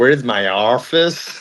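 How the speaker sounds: put-on terrible, slow American accent.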